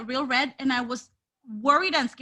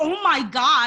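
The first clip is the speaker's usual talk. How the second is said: loud scream of real pain; 6 dB louder than usual. Retelling how Nia Jax screamed after landing hard: imitating Nia Jax screaming in pain. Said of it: "She's screaming".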